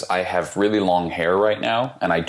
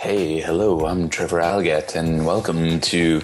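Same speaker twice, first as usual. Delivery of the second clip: put-on smooth jazz radio voice. Teasing the co-host about how his intro sounds, imitating Trevor Algatt's smooth-jazz voice. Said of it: "smooth jazz radio".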